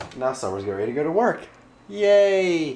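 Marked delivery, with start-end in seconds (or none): 1.9-2.8 sarcastic mock cheer, high and drawn out. Filming before leaving for work: sarcastic cheer. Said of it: "but like sarcastic".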